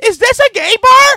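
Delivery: really loud, very high, shrill blurted line. Retelling what someone asked on a bar patio, the speaker quotes it really loud. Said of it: "like in a really loud voice".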